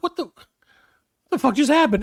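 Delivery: stunned disbelief. Retelling own reaction after a driver flipped them off: retelling own shocked reaction. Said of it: "I can't even tell you how shocked I was".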